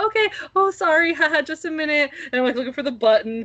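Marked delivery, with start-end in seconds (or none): 0.0-2.1 put-on sweet, high, girly, extra-polite voice. Retelling searching for a button in front of a stranger, girly polite stranger voice. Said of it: "I have like my polite stranger voice, which is like a little more girly".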